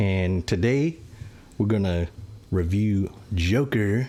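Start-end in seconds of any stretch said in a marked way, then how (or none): 2.5-4.1 put-on slow, drawn-out French accent. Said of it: "Say it in that accent".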